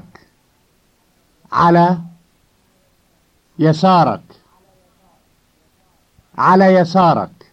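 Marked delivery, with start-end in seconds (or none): 1.5-4.2 ala yasarak said one word at a time, with pause. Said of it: "first a word at a time".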